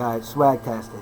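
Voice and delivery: normal talking voice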